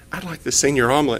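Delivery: meek, embarrassed tone. Speaker retelling ordering from the waitress, retelling a sheepish request. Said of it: "I sheepishly said".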